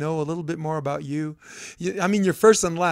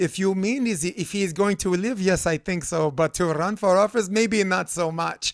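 put-on woman's Ukrainian accent, measured and thoughtful; 3 semitones higher than usual. Speaker retells a woman's answer to her question, imitating her accent. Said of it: "she said in her accent".

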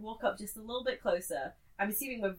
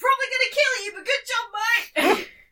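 high, loud, shrill, booming yell; 14 semitones higher, 10 dB louder than usual. Voicing Gashbers praising a foe mid-fight: yelling in character. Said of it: "Gashbers is gonna yell".

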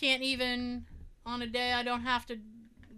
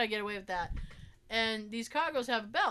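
ordinary talk, nothing marked

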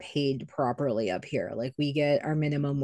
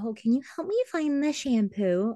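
high, put-on dim, clueless voice, mocking.

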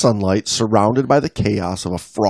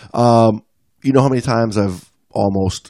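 normal talking voice

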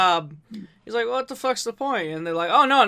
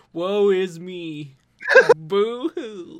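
put-on mopey, glum cartoon character voice. Reacting to Mark Hamill's depressed voice, the speaker does a mock-depressed Droopy voice. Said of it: "Reminds me of Droopy".

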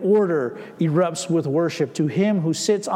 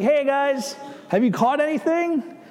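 high, carrying call. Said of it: "he calls out to them".

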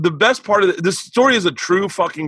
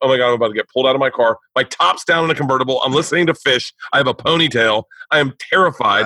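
ordinary talk

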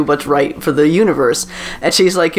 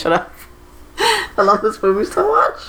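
crying, emotional, tearful, pitched-up swooping gush; 5 semitones higher than usual. Speaker talking about a movie they love, crying, emotional. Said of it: "I'm crying again".

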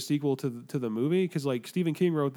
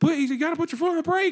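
put-on, all-out, high-pitched screaming; 4 dB louder than usual. Telling a story, the speaker acts out a man screaming at her: retelling a scream. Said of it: "He's like screaming at her".

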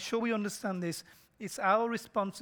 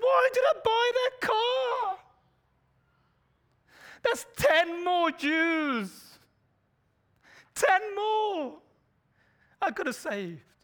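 loud, very high-pitched, sobbing, tearful wail; 12 semitones higher, 6 dB louder than usual. Speaker addressing friends, acting out a man's words, imitating someone weeping. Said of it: "And he's weeping".

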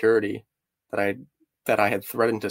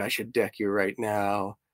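quieter mock angry outburst, mock flipping out; 4 dB quieter than usual. Telling a story, quoting a man who flipped out on the speaker; retelling an angry outburst. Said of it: "And he flipped out on me".

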